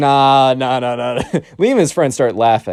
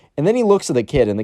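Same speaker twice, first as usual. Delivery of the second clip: normal talking voice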